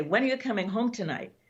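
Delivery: accusatory voice. Showing how the same question can be meant two ways, in an accusatory tone. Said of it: "you could call it an accusatory tone".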